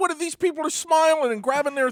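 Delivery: high, loud, smug, mocking taunt, crowed out. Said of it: "And they're like".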